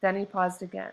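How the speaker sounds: ordinary delivery, nothing marked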